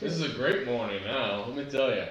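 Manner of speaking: sarcastic, ironic tone. Reacting in character to news of an execution: sarcastic. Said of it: "in a sarcastic mood".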